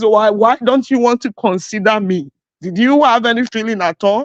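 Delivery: put-on pleading through tears, crying. Retelling a voice message sent to a husband: imitating own crying plea. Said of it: "sent a voice recording crying like this".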